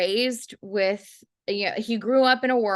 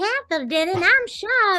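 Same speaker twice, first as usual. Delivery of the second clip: silly, dumb little put-on knife voice, higher; 11 semitones higher, 3 dB louder than usual. Retelling a joke from editing a film: dumb little voice of a talking knife. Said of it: "this dumb little voice going like".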